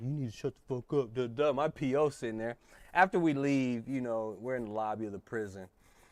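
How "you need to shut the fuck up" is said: quiet, hushed stage half-whisper. Retelling what someone half-whispered in the speaker's ear: imitating someone half-whispering. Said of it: "had to come over to whisper in my".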